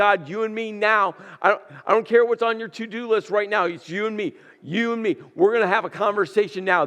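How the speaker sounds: insistent, aggressive, confrontational, in-your-face tone. Acting out Elijah confronting God face to face: aggressive Elijah voice. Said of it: "aggressively approaches God".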